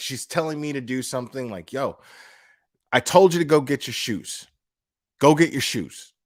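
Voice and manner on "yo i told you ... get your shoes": half-joking, menacing, threatening tone. Retelling how mom ordered a kid to get shoes: imitating mom's joking threat. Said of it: "jokingly, almost in a threatening manner".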